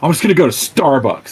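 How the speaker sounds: downcast, crestfallen tone. Acting out a character walking away after being escorted out: dejected. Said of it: "puts his hand in his pockets all dejected".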